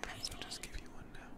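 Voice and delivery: teasing, unvoiced ASMR-style whisper.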